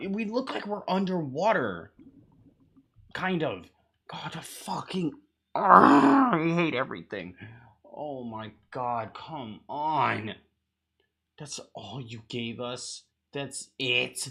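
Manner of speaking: fed-up, furious, exasperated outburst. Still reacting to the tiny teaser they were given, angry. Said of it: "I'm so fucking mad".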